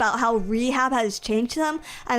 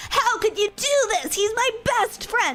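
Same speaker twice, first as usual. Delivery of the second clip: mock screaming at a very high pitch; 10 semitones higher than usual. Telling the story of a separating couple, act out what he said to her, imitating someone screaming. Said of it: "So he's screaming like".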